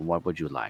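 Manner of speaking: hushed, soft half-whisper, very close. Speaking in character, mouth near a companion's ear: half-whispering. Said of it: "and I whisper to you".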